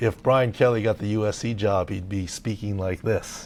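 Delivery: plain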